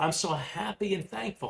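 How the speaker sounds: passionate, high, convinced delivery. Demonstrating an affirmation to repeat again and again, with passion and conviction. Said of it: "with passion and conviction".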